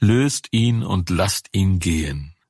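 ordinary delivery

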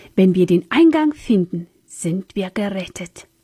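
ordinary delivery

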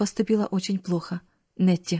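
ordinary delivery

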